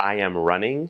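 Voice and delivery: ordinary talk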